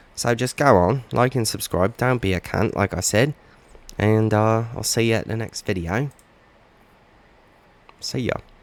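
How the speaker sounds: put-on British accent. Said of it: "I'll do my whole videos sounding British like this".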